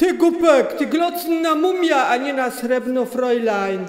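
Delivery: loud, booming, hulking strongman voice. Reading a tale aloud, the narrator voices Jonasz answering a blind man: Jonasz's strongman voice. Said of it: "który to wprawdzie liczyć nie umiał, ale duży i silny był jak osiłek. / który to wprawdzie liczyć nie umiał, ale duży i silny był jak osiłek. Ten stał teraz przed witryną i pilnował, żeby ludzie zbyt".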